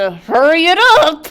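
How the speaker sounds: forced through clenched teeth. Playing a character during a turn-based game, through gritted teeth. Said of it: "between gritted teeth".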